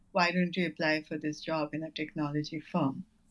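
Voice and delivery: ordinary talk, nothing marked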